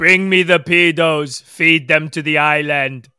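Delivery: loud, terrible put-on Dutch accent. Asked what he might say, doing a bad Dennis Bergkamp impression. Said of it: "That's the worst Dutch accent I have ever heard".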